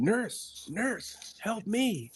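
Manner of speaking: put-on very high, very slow, drawn-out desperate scream. A nurse retells a man on her floor calling for help, retelling his scream. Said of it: "he was screaming".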